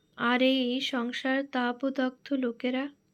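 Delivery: ordinary delivery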